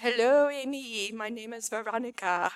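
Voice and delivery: put-on strong French accent, slow and unhurried. Speaker retells a call from an unknown woman, in Veronica's French accent. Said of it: "in her very French voice".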